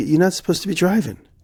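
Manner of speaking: high alarmed scolding.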